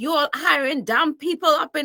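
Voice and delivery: angry, irate outburst, going off. Retelling a customer going off at a new worker: imitating a customer going off. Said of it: "he just went off on me".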